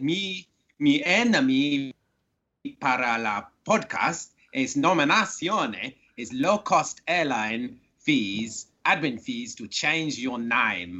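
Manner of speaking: put-on Spanish accent, broken English. Asked to give his podcast nomination in his Miguel accent, in a Miguel accent. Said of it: "You got to do it in your Miguel accent".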